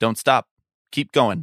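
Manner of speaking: very fatherly, paternal, dad-like delivery. Retelling what he said while handing back the suitcase: imitating a fatherly tone. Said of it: "in a very, like, fatherly tone".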